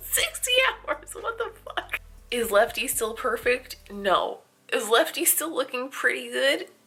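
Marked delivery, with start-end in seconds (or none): 0.0-2.0 very high voice, words breaking into laughter. Checking in late at night after sixty hours of wear: laughing while talking. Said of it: "I can't stop laughing about it".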